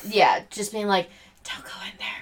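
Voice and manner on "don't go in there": breathy, very quiet whisper. Retelling a movie scene where Sarah warns him: imitating Sarah whispering. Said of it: "Sarah is whispering".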